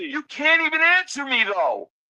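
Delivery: heated, pressing, insistent, argumentative tone. Arguing that the other speaker cannot answer him: screaming. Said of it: "Can you not scream?".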